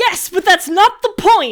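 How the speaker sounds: full-on high, loud shouting. Answering a question after kicking a door in: yelling. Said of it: "can you stop yelling?".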